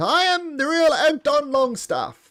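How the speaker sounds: very high, shrill shouted yell. Narrating a player's character yelling to the crowd: yelling in character. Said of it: "you yell out".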